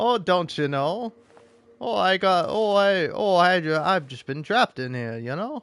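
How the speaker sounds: put-on Minnesota-accented speech. Joking about the Midwestern accents some of these guys have, Minnesota accent. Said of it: "Midwestern slash like Minnesota accents".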